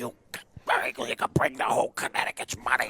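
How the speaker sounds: raspy, smoky near-whisper. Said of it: "that raspy, smoky voice".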